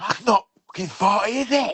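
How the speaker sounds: mock very high, all-out furious yell. Retelling own reaction to a speeding driver: imitating own angry scream. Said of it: "I just screamed like".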